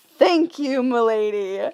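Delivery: mock-courtly respectful kid voice. Recalling a demanding kid who suddenly said thanks, imitating his gentlemanly manner. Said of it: "in the most respectful and gentlemanly manner".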